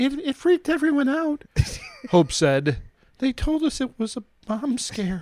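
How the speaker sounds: very high, scared, frightened woman's voice. Reading a news story, quoting an employee, Hope: mock-scared voice as Hope. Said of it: "was that your scared woman voice?".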